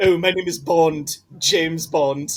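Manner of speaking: little British man voice. Imagining a scene where Bond introduces himself: Stewie voice. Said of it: "it's just Stewie the entire film".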